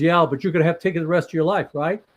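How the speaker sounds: mock sarcastic tone. Retelling what a woman told him at an event, imitating a sarcastic remark. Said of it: "very sarcastic when she said it".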